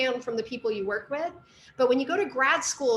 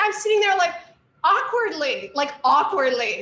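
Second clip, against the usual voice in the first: ordinary talk, nothing marked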